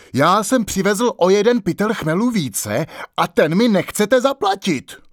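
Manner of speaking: high, heated, shouted yelling. A carter in a loud quarrel with the brewer, shouting. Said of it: "Jeden z nich na Sládka křičel".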